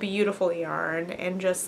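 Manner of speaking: ordinary talk, nothing marked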